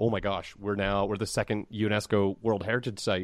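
ordinary delivery

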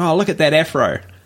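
ordinary delivery

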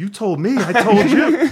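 very high, slowed, drawn-out, play-acted indignant retort. Retelling an offended reply to a claim: retelling an offended reply.

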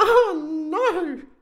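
exclaimed feigned horror, very high-pitched. Narrator reads the bear's reply to the interviewer, in mock horror. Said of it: "Baby Bear exclaimed in mock horror".

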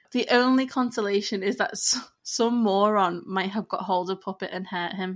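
ordinary talk

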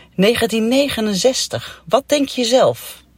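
put-on high, scornful, mocking put-down tone. Retelling how a doctor answered the speaker's question, imitating the doctor's mocking reply. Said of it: "Ze keek me even spottend aan".

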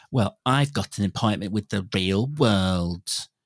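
acted smug, self-satisfied, very slow dragged-out drawl. Mocking how a character delivered a line: imitating Beth, smug. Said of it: "Did you not think it was smug".

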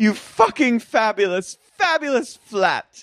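fake British accent, shrill, pitched very high. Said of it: "Do you have a British accent now".

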